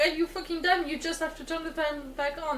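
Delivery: normal talking voice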